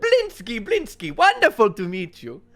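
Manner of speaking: very high, loud, swooping, booming delivery. Voicing a portly jester shaking a hand forcibly: Blinsky voice. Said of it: "big portly man in this really tight".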